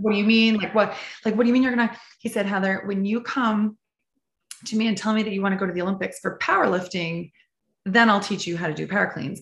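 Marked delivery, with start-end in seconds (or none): 0.0-1.9 put-on alarmed, panicking voice, fast. Retelling the speaker's reply to a man who said no, retelling panicked questions. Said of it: "I'm like panicking going".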